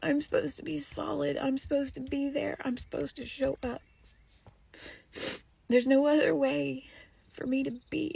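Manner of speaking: crying while talking. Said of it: "sorry I'm on here crying again".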